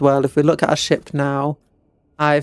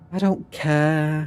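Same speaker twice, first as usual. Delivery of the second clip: mock bored emo drawl, very uncaring, words drawn out; 4 dB quieter than usual. Explaining how an emo voice works, speaker sounds super disinterested. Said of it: "you have to sound super disinterested, like".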